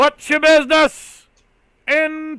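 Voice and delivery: hollering from a distance. A tower guard calls down to someone below asking their business, hollering down from the tower. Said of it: "the guard in the tower is kind of hollering down at you".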